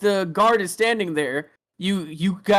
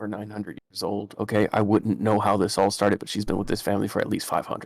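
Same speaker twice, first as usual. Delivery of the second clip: hushed, lower and quieter voice; 9 semitones lower, 4 dB quieter than usual. Voicing a character who leans in to reveal a secret: speaking quietly. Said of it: "he leans in really quietly".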